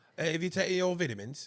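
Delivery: terrible fake British accent. Trying accents on the word vitamins with a co-host, in a bad british accent. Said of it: "that is the worst accent".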